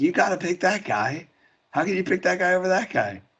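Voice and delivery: high put-on yelling.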